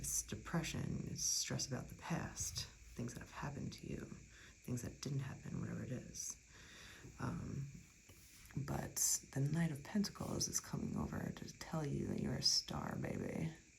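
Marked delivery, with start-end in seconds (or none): 12.2-13.5 badly done fifties Hollywood accent. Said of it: "the worst nineteen fifties Hollywood accent I can do".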